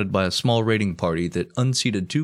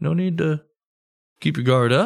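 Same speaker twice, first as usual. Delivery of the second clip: super friendly, ultra chill voice, pitched higher; 7 semitones higher than usual. Acting out Cortez reassuring the people he visits: super friendly, ultra chill Cortez. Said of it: "a super friendly, ultra, ultra chill dude".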